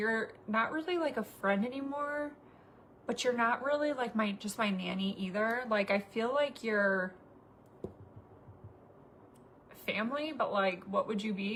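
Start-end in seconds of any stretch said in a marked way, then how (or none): none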